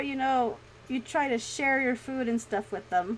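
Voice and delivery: ordinary talk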